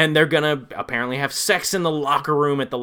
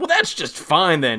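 very indignant, thoroughly affronted tone; 3 semitones higher than usual. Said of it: "in a very indignant tone".

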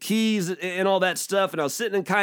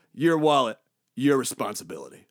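mock-deadpan, dry, dead-serious, very low delivery; 7 semitones lower than usual. A father retells his nine-year-old son's reply about the dropped wallet, imitating deadpan. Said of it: "He looks at me deadpan and goes".

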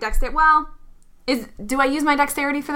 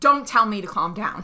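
normal talking voice

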